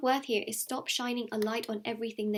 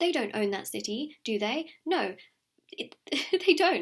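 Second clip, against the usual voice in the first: getting heated and worked up, rising pitch; 4 dB louder than usual. Speaking to listeners about painful reminders of another person, worked up. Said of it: "I'm getting worked up here".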